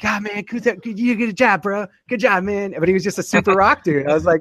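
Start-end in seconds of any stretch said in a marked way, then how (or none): 0.0-2.7 put-on high cartoon child voice. Retelling what the winning player said after the game: Cartman voice. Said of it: "He literally He sounded like Cartman. He's like".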